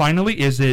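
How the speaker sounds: ordinary delivery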